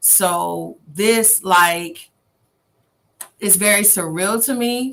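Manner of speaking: fighting back tears. Saying the moment feels very surreal: choked up. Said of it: "I'm trying not to get choked up".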